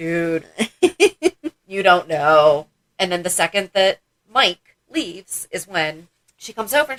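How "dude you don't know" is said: slow, knowing, laughing aside. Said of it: "Brenda is standing in the background like".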